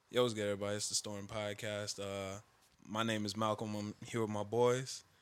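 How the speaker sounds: uneasy, wobbly, shaky, uncomfortable and nervous. Recreating an old podcast intro from episode one: imitating own shaky, uncomfortable voice. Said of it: "my voice was so shaky and uncomfortable".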